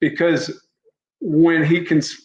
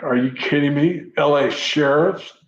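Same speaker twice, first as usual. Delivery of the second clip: mock, imitated disgusted contempt. Retelling how he answered the speaker, acting out his contempt and disgust. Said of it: "almost with like contempt and like disgust".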